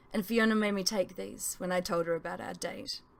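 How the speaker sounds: usual speaking voice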